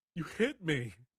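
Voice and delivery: very loud, very high-pitched weeping. Knocked down by a light tap, a character protests, crying. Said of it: "Are you crying?".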